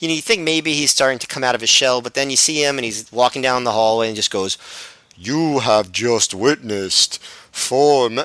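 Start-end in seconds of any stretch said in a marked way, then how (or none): 5.2-8.2 dull, drawn-out, serious announcer-like delivery. Retelling a wrestler's hallway promo: imitating Low Ki's dull, serious promo. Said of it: "dull and boring to hear him talking like that".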